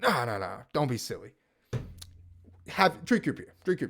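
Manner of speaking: acted-out, insistent, stern, firm man's voice. Retelling how the consultant insisted the coder stay: imitating a stern man. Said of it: "in a really, really, like, stern man".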